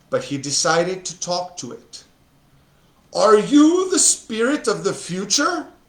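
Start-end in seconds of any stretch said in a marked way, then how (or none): 3.1-5.6 scared, frightened, fearful, pitched-up voice. Narrator reading Scrooge speaking to the hooded ghost of the future, scared voice. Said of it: "he asked in a scared voice".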